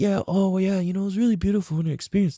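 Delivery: mock soft-spoken intellectual voice. Describing how a man really talked, imitating a soft-spoken intellectual. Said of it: "He's all soft and soft spoken and like intellectual".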